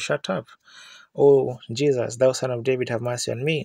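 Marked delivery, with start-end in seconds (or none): none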